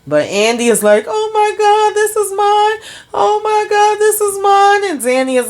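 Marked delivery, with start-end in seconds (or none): 1.0-4.9 put-on overjoyed crying, very high, tearful excited gush. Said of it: "breathing and crying and looking all crazy".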